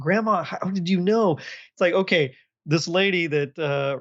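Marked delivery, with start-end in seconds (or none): 0.0-1.4 play-acted stunned, incredulous, can't-believe-it tone. Retelling the kids' reaction to the grandmother: imitating incredulous kids. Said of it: "they're almost incredulous".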